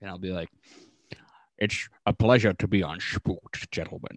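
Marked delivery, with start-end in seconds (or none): 1.6-4.2 put-on Scottish accent, movie-star style voice. Joking about being announced as a podcast guest: Sean Connery voice. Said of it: "you say it's Sean Connery on".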